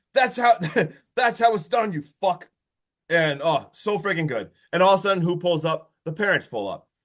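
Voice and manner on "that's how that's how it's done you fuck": mock yelling, pitched higher. Recapping a scene where he elbow-drops a guy repeatedly, retelling a yell. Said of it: "he literally yells like".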